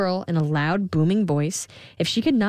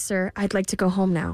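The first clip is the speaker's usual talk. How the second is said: plain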